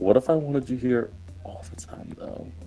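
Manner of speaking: soft, hushed, breathy whisper, barely voiced. Answering someone who apologizes for coming back again, the character is whispering. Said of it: "Panda just whispers".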